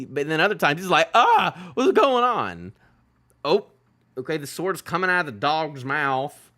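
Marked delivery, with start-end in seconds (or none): 1.1-2.7 play-acted distressed outburst, swooping, pitch all over. Commenting on a game and imitating a character: imitating distressed Loki. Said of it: "Loki do be looking, like, distressed a lot".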